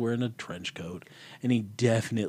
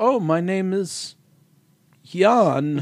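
put-on Eastern European accent, very slow and pitched up; 9 semitones higher, 7 dB louder than usual. Acting out a transformed character introducing himself, in an Eastern European accent. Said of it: "most Eastern European man in a trench coat".

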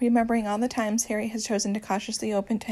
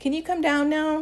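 slightly impatient, with the pitch pushed up; 6 semitones higher than usual. [name] asks Louis to come down now that it is dark: a tad impatient. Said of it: "a tad impatient".

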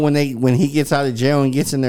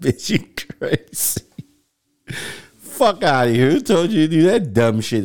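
words broken up by laughter; 3 semitones higher than usual. Acting out a reply to an ex's face tattoo: acted laughing while talking. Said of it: "I started laughing like".

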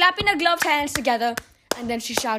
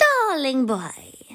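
cooed sweetly in a honeyed tone. Reading the witch calling the boy up to the platform: cooing.

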